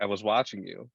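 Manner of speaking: normal talking voice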